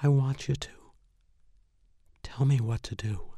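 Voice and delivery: almost a whisper. Narrating a story, a woman speaks to the narrator in a near whisper. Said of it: "spoke in a near whisper".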